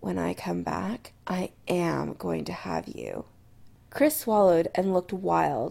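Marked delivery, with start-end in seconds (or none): 0.0-3.3 low, quiet, firm, determined. [name] leans in to Chris before going away, low and determined. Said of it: "low and determined".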